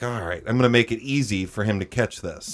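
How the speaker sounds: ordinary talk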